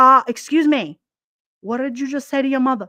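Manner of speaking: fatherly voice. Retelling how the father confronted the kids: imitating his father. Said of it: "He'd be like".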